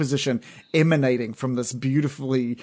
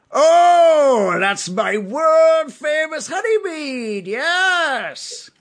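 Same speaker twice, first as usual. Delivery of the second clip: goblin voice, very high pitched and very slow; 7 dB louder than usual. Voicing a barkeep answering a customer's question: barkeep voice mixed with goblin. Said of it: "maybe a mix between a goblin and a".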